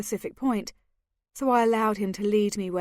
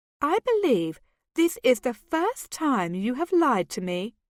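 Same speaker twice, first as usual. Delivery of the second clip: teasing, mocking, swooping sing-song voice; 3 semitones higher than usual. Reading a story aloud, the narrator teasing Kentley: mocking voice. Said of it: "I said in a mocking voice".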